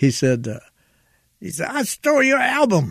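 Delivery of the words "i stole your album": very high, distinctive voice. Retelling what Richard said while handing over an award: imitating Richard's distinctive voice. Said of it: "in that distinctive voice of his".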